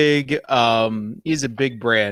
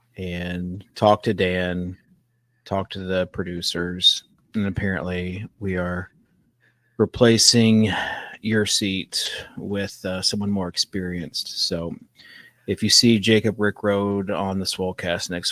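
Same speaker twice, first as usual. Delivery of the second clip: utterly deadpan, low and flat; 4 semitones lower, 3 dB quieter than usual. Following another speaker's request to deliver the lines, deadpan. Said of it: "I want you in a deadpan to say".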